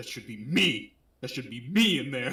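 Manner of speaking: worked-up, put-out, mad and angry voice. Talking with a friend about a Metal Gear scene, quoting Ocelot: mock-mad Ocelot impression. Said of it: "Ocelot was like so mad".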